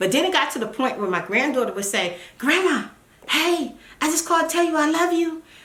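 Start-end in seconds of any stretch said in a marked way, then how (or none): 2.4-5.1 put-on whisper, higher pitch. Retelling a granddaughter's secret phone call, imitating her whispering. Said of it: "why are you whispering?".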